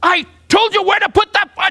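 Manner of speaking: mock, shrill, very high-pitched screaming. Retelling a teacher correcting a student's foot: imitating someone screaming. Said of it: "Chiba started screaming".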